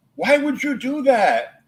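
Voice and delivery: shrill, very high yell. Retelling how she yelled at the speaker at age three, imitating her yelling. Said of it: "she yelled at me and goes".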